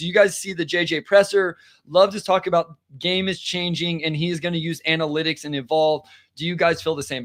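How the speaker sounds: ordinary talk, nothing marked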